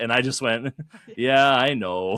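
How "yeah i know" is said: put-on sorry-sounding voice, sad, raised. A player retelling answering another player over voice chat: retelling a put-on sad reply. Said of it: "like kind of sad sounding".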